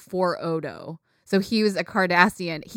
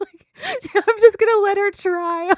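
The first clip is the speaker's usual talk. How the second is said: talking through laughter, higher and louder; 14 semitones higher, 6 dB louder than usual. Letting the other speaker guess a character's name, laughing while talking. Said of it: "Sorry that I'm just laughing".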